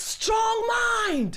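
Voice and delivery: high, loud, commanding shout.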